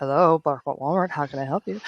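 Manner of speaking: low, sultry, seductive, soothing sexy voice. Showing how to answer a caller on the phone, in a sexy voice. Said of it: "you just bring out your sexy voice".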